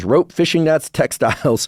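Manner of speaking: speaking while laughing. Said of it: "I'm not laughing because it's funny".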